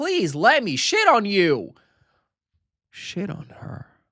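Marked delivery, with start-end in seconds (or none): 0.0-1.7 mock very loud, exasperated, drawn-out, swooping, frustrated tone. Retelling a story, the character at a breaking point: imitating a frustrated plea.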